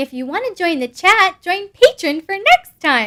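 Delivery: put-on adorable little-kitten voice, high and loud. Speaking a message on behalf of the speaker's little kitten, voicing the kitten. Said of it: "I'm speaking that in her voice".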